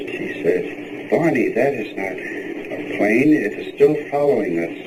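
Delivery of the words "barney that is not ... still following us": ordinary talk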